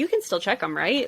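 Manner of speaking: acted, light, breezy, faintly condescending tone. Quoting him as he tried to make it lighthearted, imitating a lighthearted tone. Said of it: "he said it in like his tone. He was like, ... Like he tried to make it lighthearted like that".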